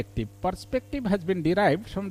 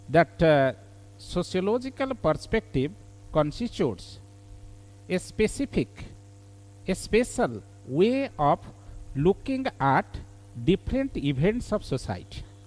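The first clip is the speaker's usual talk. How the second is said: deliberate, very slow, each word separated. Teacher dictating a definition for students to write down, speaking very slowly. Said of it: "I am speaking very slowly".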